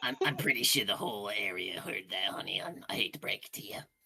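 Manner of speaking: tiny, little imp voice. Voicing a little imp in a tuxedo who greets a player: little imp voice. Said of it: "a little imp in a tuxedo".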